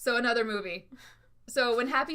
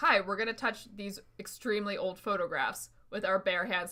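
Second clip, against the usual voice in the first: plain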